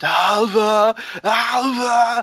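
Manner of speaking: put-on high shout, repeated over and over, drawn out. Describing bits where he calls her name for minutes, in a Nick Cage shouting impression. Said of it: "he just like shouts her name".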